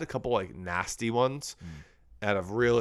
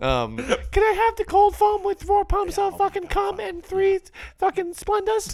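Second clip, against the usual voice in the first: very high, loud, snooty put-on customer voice; 7 dB louder than usual. Joking about Starbucks customers with a co-speaker, Starbucks customer impression. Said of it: "I like our Starbucks impression".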